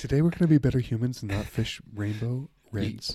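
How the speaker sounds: calm, even public radio host voice. Redoing the opening line after being urged to talk, NPR voice. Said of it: "that's a good NPR voice".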